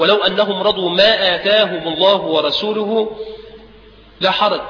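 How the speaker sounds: normal talking voice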